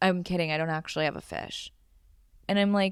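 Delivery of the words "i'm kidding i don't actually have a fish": put-on dead-serious, deadpan tone. Retelling a regular customer's reply after his face drops: imitating someone dead serious. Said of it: "go from smiling and joking to dead serious".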